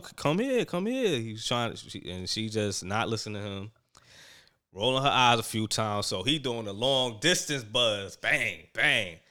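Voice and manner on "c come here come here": high, mock calling-out voice. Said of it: "and then he was like".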